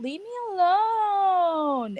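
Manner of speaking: slow, high, dragged-out annoyed plea.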